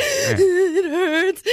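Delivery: high crying sob, crying out in pain through tears. Retelling the ride home after sneaking out, reenacting own crying. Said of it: "I'm crying".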